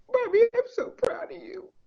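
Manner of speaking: very high, choked-up voice, close to breaking down. Mother retelling what her child said after she passed a big test, near breaking down. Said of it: "excuse me if I break down".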